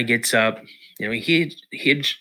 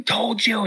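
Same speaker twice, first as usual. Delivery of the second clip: put-on furious, very high-pitched angry outburst; 11 semitones higher than usual. Retelling a dad yelling at his son who stopped running: imitating someone flipping out. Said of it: "flipping out on me".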